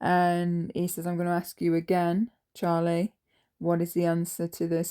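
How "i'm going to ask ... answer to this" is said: menacing, deadly serious, intimidating tone. Retelling what he said while crouched over the desk: imitating a serious, intimidating tone. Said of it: "in a very serious, intimidating tone and voice".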